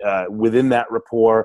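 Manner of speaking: ordinary talk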